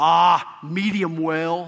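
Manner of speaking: mildly sarcastic, wry tone. Retelling a friend's answer after church, mimicking a sort-of sarcastic reply. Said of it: "My buddy said sort of sarcastically".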